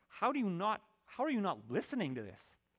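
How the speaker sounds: pleading, exasperated tone. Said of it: "it's almost like the Father is pleading".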